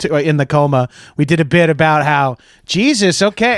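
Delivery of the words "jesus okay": ordinary delivery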